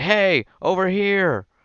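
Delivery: loud, shrill, very high calling-out shout. Voicing an archer who shoots a creature in the back: yelling. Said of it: "yelling at it too".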